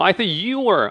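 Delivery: heavy stress on the word you. Korean lesson on english sentence intonation: stress on you. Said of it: "you야, you. ... 이렇게 했거든".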